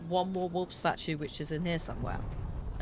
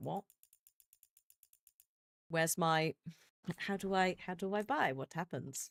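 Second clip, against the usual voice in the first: ordinary talk, nothing marked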